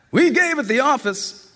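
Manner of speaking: child hollering high in a put-on grown-up voice. Reading a line hollered through a closed door: hollering, trying to sound grown-up. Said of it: "a voice hollered out".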